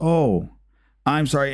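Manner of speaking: put-on shy, nervous child voice. Retelling a kid's apology from a door camera video: imitating a shy, nervous kid. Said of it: "gets all, like, really shy and nervous".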